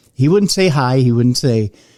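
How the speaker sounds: usual speaking voice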